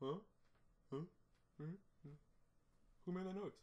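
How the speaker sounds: very high-pitched, puzzled, confused giraffe voice. Retelling how giraffes at the zoo react: voicing confused giraffes. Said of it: "they'll look over me and be like".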